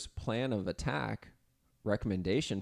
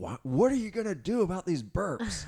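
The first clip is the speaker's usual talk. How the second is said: shrill, swooping, rising, very high put-on yell; 9 semitones higher, 4 dB louder than usual. Retelling a partner's complaint about burps: imitating Jenny yelling. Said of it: "yelling at me".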